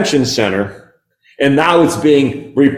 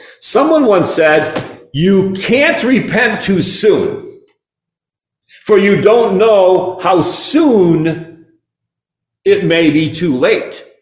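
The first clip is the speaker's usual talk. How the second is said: slow, measured, deliberate, unhurried, pitched up; 5 semitones higher than usual. A speaker quoting a saying to the congregation, said slowly. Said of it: "I'm going to say this slowly".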